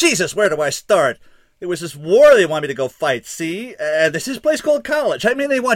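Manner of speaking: bottled-up outburst rising into an exploding yell. The kid, bottled up too long, finally explodes at him: yelled. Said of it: "he yelled".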